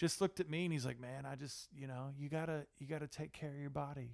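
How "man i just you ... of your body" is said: mock effortlessly cool rock-star delivery, soft, laid-back. Retelling what a man said after a double take, imitating a super cool tone. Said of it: "he just said it in a super cool sort of way".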